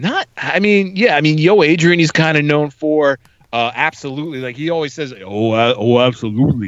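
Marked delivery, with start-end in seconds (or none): 5.2-6.7 put-on slurred speech. Quoting another actor's catchphrase to another speaker: Sylvester Stallone mush-mouth voice. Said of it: "almost like a mush mouth kind of a voice".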